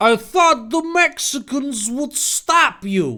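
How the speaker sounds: put-on New Jersey accent. Narrating a story, giving the character Zelda her line in a New Jersey accent. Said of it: "I'm gonna give her a New Jersey accent also".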